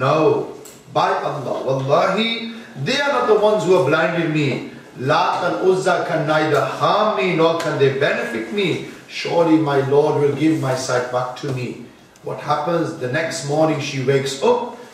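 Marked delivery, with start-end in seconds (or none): none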